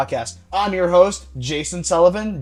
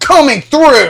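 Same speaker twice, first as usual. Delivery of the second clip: very loud, high, angry barging-through yell; 8 semitones higher, 10 dB louder than usual. Retelling a childhood moment of shoving through two girls: imitating an angry shove-through shout. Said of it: "stomping my feet, like, all angry and stuff".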